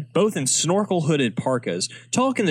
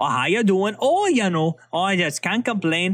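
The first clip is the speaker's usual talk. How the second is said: chatty, put-on Wisconsin accent; 5 semitones higher than usual. Discussing a movie, the speaker mimics how people there talk, imitating how people sound. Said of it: "people just walk around sounding like that".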